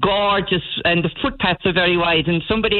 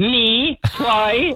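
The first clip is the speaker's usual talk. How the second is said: put-on Dublin Irish accent; 4 semitones higher than usual. Retelling how a woman popped her head out the door to answer, Dublin accent. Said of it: "in her best Dublin accent".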